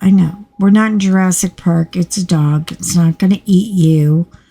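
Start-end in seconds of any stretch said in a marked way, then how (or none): none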